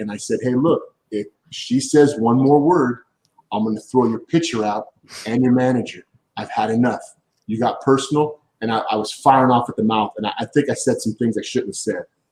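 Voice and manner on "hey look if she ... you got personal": ordinary delivery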